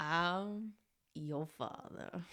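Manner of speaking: low-pitched, murmured delivery. Asked to say a movie quote, doing a Matthew McConaughey impression. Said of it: "That's my best Matthew McConaughey".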